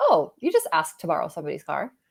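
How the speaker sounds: normal talking voice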